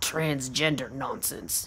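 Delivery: quiet, low, rough growl. Narrator reading a suspicious man's reply to the narrator's question, growling. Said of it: "he growls".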